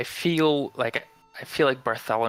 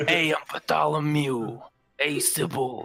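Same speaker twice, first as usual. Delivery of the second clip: higher-pitched put-on New York voice; 4 semitones higher than usual. Players imagine a voice for the character Bartholomew, Phil from Hercules voice. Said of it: "really like New York voice".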